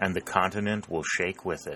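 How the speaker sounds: plain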